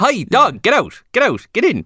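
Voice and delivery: put-on Irish accent. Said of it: "That's 'cause we talked to him like that".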